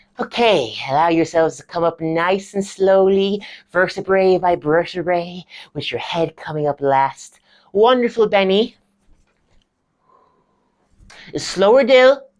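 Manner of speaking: theatrical drama teacher voice. Acting out the drama lecturer guiding the class: Stevie's voice. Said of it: "my drama lecturer".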